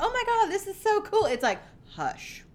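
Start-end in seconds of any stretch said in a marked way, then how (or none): 0.0-1.2 high-pitched mock gush in a young voice. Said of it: "are like".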